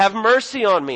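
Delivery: loud, screamed, begging, pleading cry. Retelling a blind man calling out to Jesus: imitating a screamed plea. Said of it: "And he screams out".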